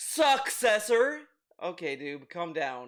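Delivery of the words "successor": smug, cocky, confrontational, in-your-face, pitched up. Imitating someone saying the word "successor" in an in-your-face tone. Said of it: "saying it in a, in a tone that's like in your face".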